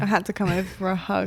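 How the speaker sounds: ordinary talk, nothing marked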